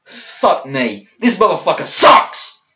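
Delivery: increasingly fed up, heated and irritated. Complaining about a wrestling match hold, getting angry. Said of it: "I'm sorry I'm getting angry".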